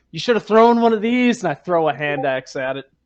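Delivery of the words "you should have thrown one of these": acted yelling, much louder. In the game, the character yells back at the angry townsdude; yelling in character. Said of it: "I'm gonna yell back to the angry townsdude".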